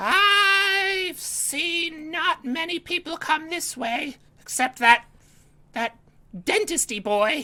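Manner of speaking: shrill, very high, shrieking voice. Voicing a character answering the wizard's question, in a high-pitched voice. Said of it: "with a high pitched voice".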